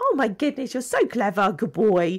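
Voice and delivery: bright, upbeat, positive, swooping sing-song. Showing how owners talk when praising a dog, in a positive praising voice. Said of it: "You you tend to be more positive".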